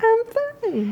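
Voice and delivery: piping, very high-pitched squeaky voice. Imitating Russ saying he is fine, in a high squeaky voice. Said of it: "With a high squeaky voice".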